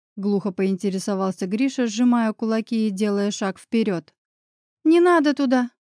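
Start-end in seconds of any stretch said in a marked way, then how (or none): 4.9-5.7 high, shaky, trembling voice. A wife answers her confronting husband in a trembling voice. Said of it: "дрожащим голосом ответила Оля".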